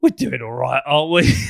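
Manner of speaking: put-on touch of old man voice. Describing how the speaker and Greg talk together: slightly geezerish voice. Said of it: "in a slightly geezerish voice going".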